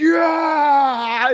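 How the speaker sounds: loud, high-pitched yell.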